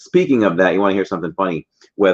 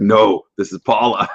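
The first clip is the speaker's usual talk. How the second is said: put-on deep, lower female voice; 3 semitones higher than usual. Retelling a phone call answered by a sister-in-law: imitating Paula's deeper voice. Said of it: "a sister-in-law who has a deeper voice".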